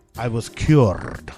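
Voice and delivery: fake Brazilian accent. Reading out a letter writer's words: bad Brazilian accent. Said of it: "same bad Brazilian accent that I do".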